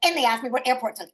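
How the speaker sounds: bratty, snotty, entitled, put-upon attitude. Retelling how a player acted coming into the room: imitating Jay's bitchy attitude. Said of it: "That attitude that he had when he came in the room and was like".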